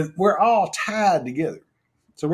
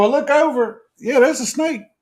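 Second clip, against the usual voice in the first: normal talking voice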